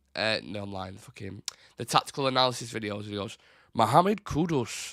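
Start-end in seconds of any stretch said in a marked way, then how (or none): 3.8-5.0 high-pitched, announcing sports analyst voice. Imitating an analysis video narrator saying a player's name: imitating Jack Fawcett. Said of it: "that ain't the accent".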